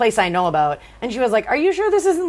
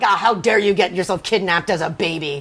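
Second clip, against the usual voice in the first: put-on mean, scolding tone, lower; 4 semitones lower than usual. Retelling how a woman treated someone harshly, mocking a mean woman. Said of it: "she was such an asshole to her".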